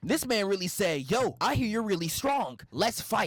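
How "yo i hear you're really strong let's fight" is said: put-on eager anime fighter voice. Retelling a movie scene where a challenger demands a fight: sounding like Son Goku. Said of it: "My dog sounding like Son Goku".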